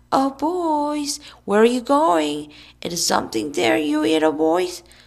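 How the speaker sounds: put-on shrill girlish high calling, boys drawn out. A boy standing on a stump calls after two other boys: shrill, girlish voice. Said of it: "called in a shrill, girlish voice".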